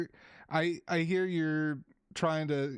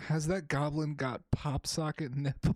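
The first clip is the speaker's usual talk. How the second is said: ordinary delivery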